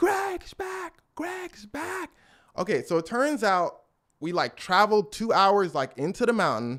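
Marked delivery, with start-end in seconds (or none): 0.0-2.1 put-on scream, very high and long drawn out. Retelling hearing people in the distance: imitating people screaming. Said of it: "we hear screaming".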